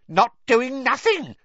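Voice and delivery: shrill, cackling ghost voice, high and loud. Reading the story aloud, voicing Peeves answering Professor McGonagall: cackling Peeves voice. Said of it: "cackled Peeves".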